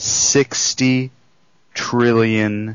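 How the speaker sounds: slow, unhurried, deliberate, each word weighed. Coaching someone on presenting big numbers, saying the figure slower. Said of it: "change your tonality, change your speed, and say it slower".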